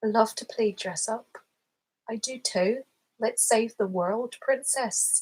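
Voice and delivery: so-so Irish accent sliding toward Scottish, Northern-leaning. Reading lines aloud while trying out accents, attempted Irish accent. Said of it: "It's kind of Northern Irish".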